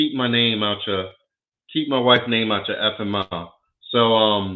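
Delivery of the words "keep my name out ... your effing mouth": ordinary talk, nothing marked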